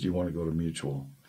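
very soft, quiet mumble. Retelling a friend's invitation to an activity: imitating a quiet mumble. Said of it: "he's really quiet and he kinda mumbled".

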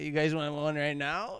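put-on drunk man voice. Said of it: "the drunk guy came up and he was like".

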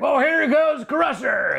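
booming monster-truck ad voice, very high, drawn out. Retelling making a turtle version of a monster truck commercial: monster truck commercial announcer voice. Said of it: "I had the voice".

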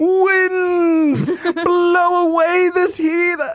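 shrill, high, all-out bombastic yell, "winds" drawn out. Speaker shows how they would voice 1990s cartoon Storm; bombastic Storm yelling. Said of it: "just yelling shit for no reason".

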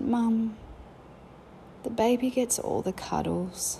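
put-on really quiet, hushed, slow small child's voice. A mother recounts her child's words to her, quoting a really quiet voice. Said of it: "in this really quiet voice".

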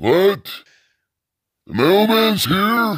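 put-on very high, hard-of-hearing old man voice. Acting out his deaf future self answering a doctor: put-on deaf old man voice. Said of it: "I'm gonna be all deaf".

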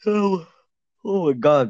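said through a yawn. Talking basketball rankings with another speaker, saying it while yawning. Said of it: "Sorry, I yawned".

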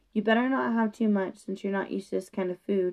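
ordinary delivery, nothing marked

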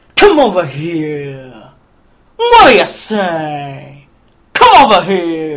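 slow, low, swooping cartoon lion drawl, "say" stretched. Retelling the Cowardly Lion's line from the film: Snagglepuss voice. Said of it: "he's doing Snagglepuss before Snagglepuss".

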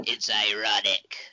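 low, dropped, deep emperor voice. Discussing a Bible passage with another speaker, Palpatine impression. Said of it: "That's my Palpatine impression".

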